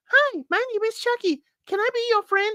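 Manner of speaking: very high, sweet, talking-doll voice. Describing a performer's voices, demonstrating the other one: Chucky's doll voice. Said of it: "he also had the doll voice available".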